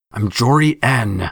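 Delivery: forced through clenched teeth. Narrating a fight, a character in the story speaks: through gritted teeth. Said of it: "she said through gritted teeth".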